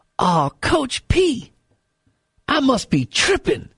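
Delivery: very slow, swooping, long drawn-out drawl. Retelling a player's reply to the coach after a timeout: imitating Earl Clark's voice. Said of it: "Earl Clark in that voice".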